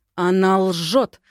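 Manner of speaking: through gritted teeth. The lady in the heated living room answers the narrator, through gritted teeth. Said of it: "процедила ядовитая леди".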